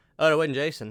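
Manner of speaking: put-on monotone voice. Retelling a brother's reaction at the end of a movie: imitating a monotone voice. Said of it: "who's very monotone".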